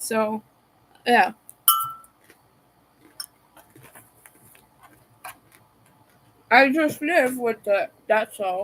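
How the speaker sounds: talking with food in mouth. Speaker finishes a thought before apologizing for eating; talking with mouth full. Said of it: "Talking with food in my mouth".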